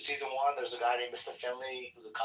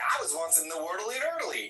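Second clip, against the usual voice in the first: raised pitch with a swinging, swooping tune; 5 semitones higher than usual. Picturing how a cartoon character would say the line: Ned Flanders voice. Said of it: "I'm picturing Ned Flanders being like".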